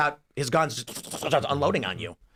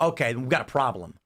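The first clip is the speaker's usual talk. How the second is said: ordinary talk, nothing marked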